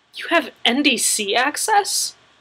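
disbelieving, incredulous, can't-believe-it tone. Narrator reads a character questioning another character, incredulous.

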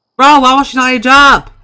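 exasperated, furious yelling, very high and very loud. Complaining that a game character will not age up: angry. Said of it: "I'm so mad right now".

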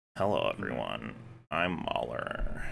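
very low, creaky drawl with heavy vocal fry. Imitating a man's video intro, with heavy vocal fry. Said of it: "he cranks the vocal fry when he does his videos".

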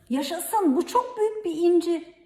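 delighted, joyful, high-pitched shout. A narrator reads a character's cry on spotting something in a bottle: joyful shout. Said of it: "Mita sevinçle haykırdı".

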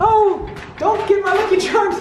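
very high, squeaky, bad fake leprechaun voice. Taking the St. Patrick's Day haul and the little leprechaun to the car, in a bad leprechaun voice. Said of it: "I really don't know how to talk like a leprechaun".

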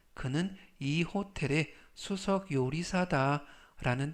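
ordinary delivery

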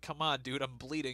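ordinary talk

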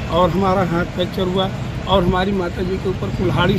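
ordinary talk

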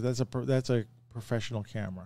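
normal talking voice

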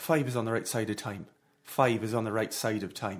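soothing, low-pitched Irish accent. Asked to do accents, the speaker demonstrates one, in an Irish accent. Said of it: "I can do Irish".

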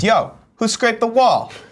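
slow, high-pitched accusatory tone. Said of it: "I'd be like this".

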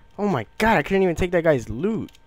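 mad, exasperated outburst. Playing a game on stream after losing an enemy's loot: frustrated, mad. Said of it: "I'm so mad right now".

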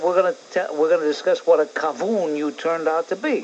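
ordinary delivery

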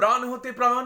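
high pitch. Demonstrating a line at the fifth scale, high pitch. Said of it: "পঞ্চম স্কেলে গেছে".

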